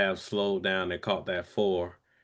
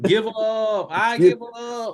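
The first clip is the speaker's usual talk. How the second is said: shrill, high, stretched-out holler; 13 semitones higher, 7 dB louder than usual. Retelling another speaker's fishing backlash moment: imitating someone yelling. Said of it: "you yelling".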